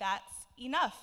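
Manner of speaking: strongest outdoor voice, very loud and firm. Retelling turning around to address the group: strongest outdoor voice. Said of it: "in like my strongest outdoor voice".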